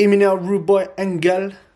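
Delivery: bad, not very good Jamaican accent, high and loud. Between rounds, saying a name in a bad jamaican accent. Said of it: "That's my Jamaican accent".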